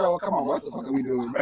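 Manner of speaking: ordinary talk, nothing marked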